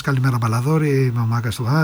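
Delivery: ordinary talk, nothing marked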